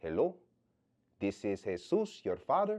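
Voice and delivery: put-on strange-sounding Puerto Rican accent. Retelling a father's first phone call: imitating Jesus's Puerto Rican accent. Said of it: "the accent that you just".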